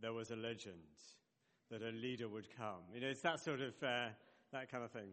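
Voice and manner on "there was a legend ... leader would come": deep-voiced, lower movie voiceover narrator voice. Explaining the voiceovers at the start of films, doing a deep-voiced movie voiceover. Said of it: "deep-voiced movie voiceovers".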